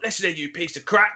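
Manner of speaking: put-on Cockney accent. Retelling what they said in a game to listeners, in a put-on Cockney accent. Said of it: "changed into like this Cockney accent".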